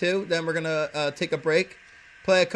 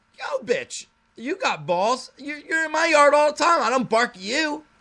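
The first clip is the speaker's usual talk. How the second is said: very high, play-acted yelling rant; 10 semitones higher than usual. Recounting being barked at in a yard, retelling his own yelling. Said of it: "I'm like yelling at her".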